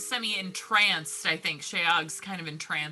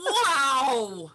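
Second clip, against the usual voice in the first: shouting, higher and louder; 8 semitones higher, 5 dB louder than usual. Greeting Peepa with admiration, yelling. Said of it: "you don't have to yell at me".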